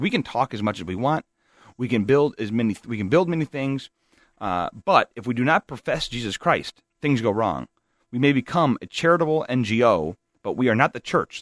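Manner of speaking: usual speaking voice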